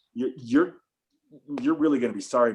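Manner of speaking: ordinary delivery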